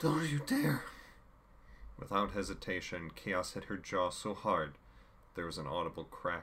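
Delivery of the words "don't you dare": ragged, breathless gasp, very high and loud. Rachel answers Chaos's threat; gasping between ragged breaths. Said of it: "Rachel gasped".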